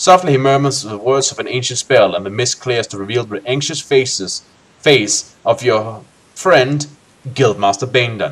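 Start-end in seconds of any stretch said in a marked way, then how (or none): none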